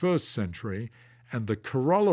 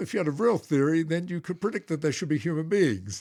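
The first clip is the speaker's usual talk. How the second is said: put-on sarcasm, higher; 4 semitones higher than usual. Retelling what he used to say at meetings, with put-on sarcasm. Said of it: "very sarcastically".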